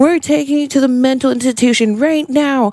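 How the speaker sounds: furious, high, raging angry outburst. Retelling the speaker's dad's reaction, imitating dad raging out. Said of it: "Like just starts like raging out".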